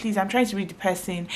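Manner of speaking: usual speaking voice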